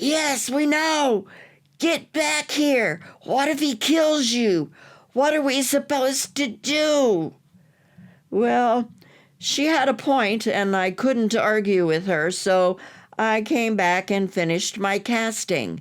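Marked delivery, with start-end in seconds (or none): 0.0-7.3 stage whisper with the word do drawn out. Retelling the daughter urging her father back: imitating an even louder whisper. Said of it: "she whispered even louder".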